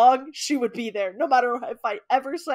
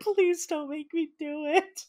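put-on crying, much quieter; 4 semitones higher, 5 dB quieter than usual. Recalling sleepovers, acting out their own past plea to friends: imitating own past crying. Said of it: "I'd be, like, crying".

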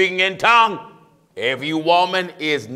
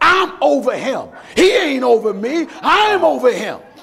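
put-on, pitched-up, loud hollering; 7 semitones higher than usual. Retelling a preacher's wife tussling with her husband, imitating someone yelling. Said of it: "She was yelling".

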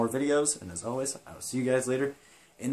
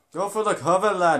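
sudden loud, high put-on Irish accent; 6 semitones higher, 7 dB louder than usual. Commentating a wrestling video game match: Irish accent. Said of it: "Why am I talking in an Irish accent?".

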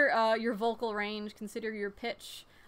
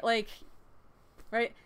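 ordinary talk, nothing marked

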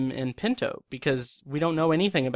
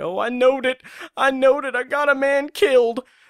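very high, raised, loud character voice outburst; 11 semitones higher, 7 dB louder than usual. Quoting an actor's line from an episode: James Best impression. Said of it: "that's my best James Best impression".

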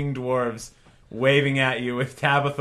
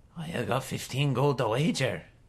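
put-on old dwarf voice, much quieter; 6 dB quieter than usual. A dwarf at the tavern table states his wager, in an old dwarf character voice. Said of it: "He's like short for dwarf standards. ... You see a table of three old grody looking dwarves waving at you with Tabitha waving at you as you dance. ... Oi, lassie".

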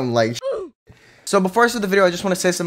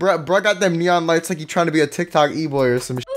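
normal talking voice

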